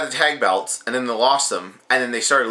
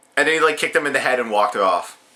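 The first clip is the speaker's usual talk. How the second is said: ordinary delivery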